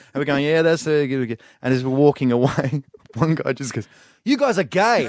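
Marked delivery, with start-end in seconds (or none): 4.2-5.1 put-on Brisbane accent, raised pitch. Retelling what a guy said as the group walked away, in a Brisbane accent impression. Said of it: "That's a great Brisbane accent you do as well".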